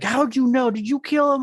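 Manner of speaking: mock shrieked, very high-pitched screaming. Retelling how a friend screamed an accusation: retelling a friend screaming. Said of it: "he was screaming at me".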